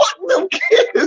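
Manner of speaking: said hard, very high and emphatic, forceful curse. Retelling how a kid said it, mimicking saying it hard. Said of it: "he said it so hard".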